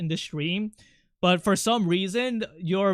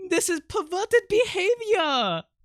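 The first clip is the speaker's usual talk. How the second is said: clumsy, bad French accent, very high-pitched; 12 semitones higher than usual. Joking with the audience, imitating a french woman: bad french accent. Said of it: "I'm gonna start talking like her".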